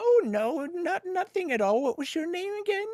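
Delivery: put-on high-pitched elderly woman voice. Retelling an older lady he helped with her bill asking his name; imitating an older lady. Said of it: "usually like older ladies".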